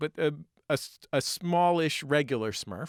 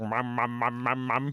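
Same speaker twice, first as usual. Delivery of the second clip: put-on old man with no teeth. Describing a figure in a picture, voicing him calling out, toothless old man voice. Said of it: "Where an old man is missing his teeth".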